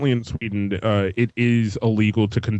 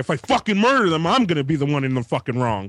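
put-on angry man voice, pitched higher; 5 semitones higher than usual. Acting out a neighbour angry about loud sex next door: imitating an angry man. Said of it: "you could tell this dude is angry".

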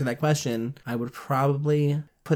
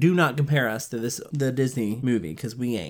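normal talking voice

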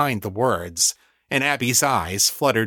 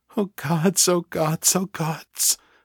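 high whimper with rising panic; 7 semitones higher than usual. Narrating Abby as she hurries past broken glass, soft panicked whimper. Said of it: "her rising panic showing in the soft whimper of her voice".

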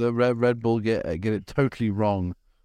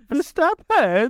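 high-pitched mock female voice. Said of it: "I'm doing it cunningly in a female voice".

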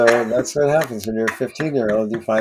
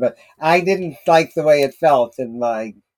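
put-on voice of an elderly woman; 2 semitones higher than usual.

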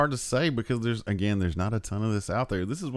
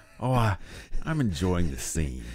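excited, animated voice with wide swooping pitch; 3 semitones lower than usual. Showing how Jack Palance sounds when excited. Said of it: "when he's excited".

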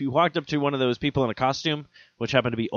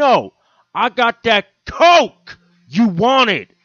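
put-on angry man voice, higher and louder; 8 semitones higher, 9 dB louder than usual. Retelling how a street seller insisted after being refused: imitating an angry man. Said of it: "very angry like".

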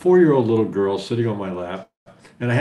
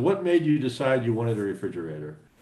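ordinary delivery

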